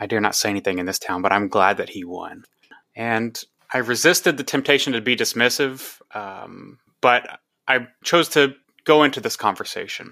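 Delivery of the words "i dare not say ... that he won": put-on muttering under the breath, lower. Retelling what an older woman said on the street, imitating someone speaking under her breath. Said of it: "kind of under her breath".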